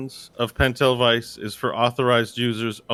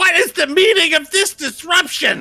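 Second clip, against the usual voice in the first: put-on very high, raised pitch, frail old voice; 5 dB louder than usual. Voicing a frail old warden who appears before the players: voicing an old frail warden. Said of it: "he leans over and he says".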